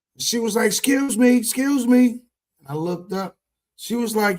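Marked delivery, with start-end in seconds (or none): 0.7-2.2 high, drawn-out hollered shout. Retelling how a neighbor on the third floor yelled down: imitating someone yelling up. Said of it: "where all this screaming was coming from".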